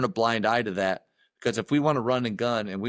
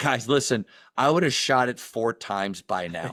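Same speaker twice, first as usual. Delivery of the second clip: usual speaking voice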